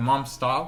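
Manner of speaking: ordinary talk, nothing marked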